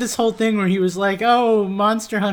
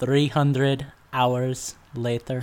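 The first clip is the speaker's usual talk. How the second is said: very deep, very drawn-out, Russian-tinged narrator announcer voice; 8 semitones lower, 5 dB quieter than usual. Sharing another joke idea: Russian-sounding SpongeBob announcer voice. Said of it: "I don't remember the announcer from SpongeBob being Russian".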